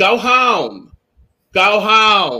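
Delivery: very slow, high, stretched-out screaming. Retelling watching the show at home: retelling screaming at the tv. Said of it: "I was just screaming at my T V".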